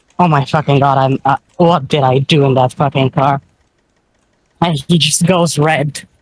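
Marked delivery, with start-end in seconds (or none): 0.2-3.4 defeated, crushed, deflated monotone voice. Acting out a character who just got out of a car: deflated, defeated voice. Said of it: "deflate and go".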